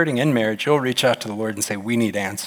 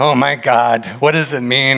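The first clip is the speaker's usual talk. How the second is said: loud, fake blubbering sobs; 2 semitones higher, 7 dB louder than usual. Retelling how a pastor pretended to weep at news: imitating mock crying. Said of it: "he's acting like he's crying".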